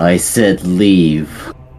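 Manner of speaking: loud, booming voice carrying far. A player's character speaks with a magically amplified voice, booming voice. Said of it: "make my voice boom out to 300 feet".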